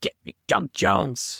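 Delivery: put-on slow, rough, creaky, gruff old man voice. Picturing a documentary title, voicing a sweaty sixty-year-old guy with a cigar. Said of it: "like a sixty-year-old guy, very sweaty with a cigar".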